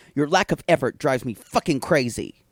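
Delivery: put-on cutting, sharp, bitter, resentful voice. Retelling a partner's phone call: imitating a sharp, bitter voice. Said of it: "his voice sounds very sharp, bitter".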